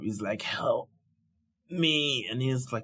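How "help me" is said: begging, pleading voice pitched up high. Retelling a cut-in-half villain's plea for his life: imitating Frieza begging. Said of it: "he is begging, pleading for life".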